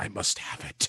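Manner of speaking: hushed, whispered mutter under the breath. Speaker imagines Salvo spotting an item he wants, Salvo muttering under his breath. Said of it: "quietly under his breath".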